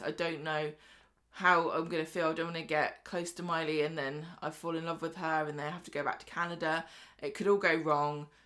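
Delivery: ordinary delivery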